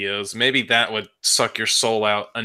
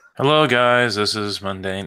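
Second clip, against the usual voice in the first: slow, bland, drawn-out voice with no character. Wondering how to impersonate Mundane Matt, the speaker tries a flat Mundane Matt impression. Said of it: "how do you do an impersonation of nothing?".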